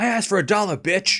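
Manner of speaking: put-on irate, angry voice. Retelling a movie scene where a man rejects a sandwich: imitating an angry movie character. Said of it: "And he's like".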